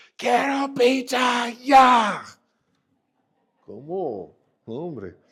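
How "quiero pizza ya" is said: put-on child voice yelling, higher and louder. Retelling a hungry two-year-old son demanding pizza in the car: imitating a child yelling. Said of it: "empieza a gritar".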